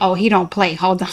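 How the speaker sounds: ordinary talk, nothing marked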